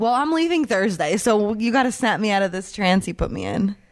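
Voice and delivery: ordinary delivery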